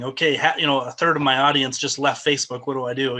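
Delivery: normal talking voice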